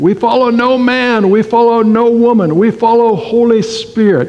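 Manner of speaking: put-on speech with a Yugoslavian accent. Speaker quoting his father-in-law's saying, imitating his Yugoslavian accent. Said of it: "in his Yugoslavian accent".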